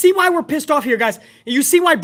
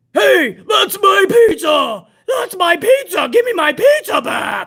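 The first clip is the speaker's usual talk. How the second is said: put-on half-shouted, slow, stretched mild yell; 4 semitones higher than usual. Retelling a wrestler yelling at another to give his pizza back: imitating someone yelling. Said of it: "he's yelling at Montez".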